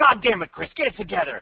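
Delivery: mock sharp, cutting, high tone. Retelling what Brad said to Chris, imitating Brad being cutting. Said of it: "Brad is like so cutting".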